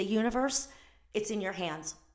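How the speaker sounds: normal talking voice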